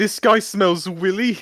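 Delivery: high-pitched, pointed, accusing tone. Voicing a character who points at a man and accuses him: said loudly. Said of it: "I point loudly".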